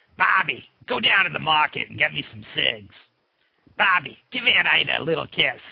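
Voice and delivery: low, put-on cartoon character voice. A dad shows his family that anyone can do cartoon voices; cartoon voice. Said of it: "Anyone can do cartoon voices".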